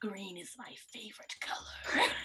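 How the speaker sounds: low, hissing voice. Voicing what he says in Draconic to the players, low hissing voice. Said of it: "in this kind of low hissing voice".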